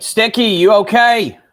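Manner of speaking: loud, high-pitched calling out. Calling out to a teammate during a firefight: shouting in character. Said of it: "And I'll shout out".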